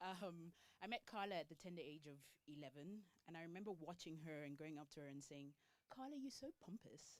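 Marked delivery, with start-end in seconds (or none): 5.9-7.2 put-on thick, heavy British accent, pitched up. Speaker retells what they told their best friend at age eleven, in a heavy British accent. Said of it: "my British accent was a bit heavy at the time".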